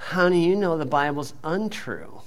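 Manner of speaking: same whiny, whining tone. Speaker mimicking a comeback to people who attack the bible, mock-whiny voice. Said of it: "with the same whiny voice".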